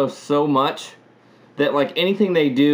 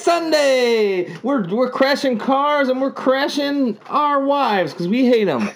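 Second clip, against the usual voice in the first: very high derby announcer hype, "Sunday" stretched; 10 semitones higher than usual. Riffing on a friend's suggestion, doing the bit: demolition derby announcer voice. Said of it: "like the guy announcing a demolition derby".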